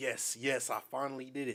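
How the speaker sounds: plain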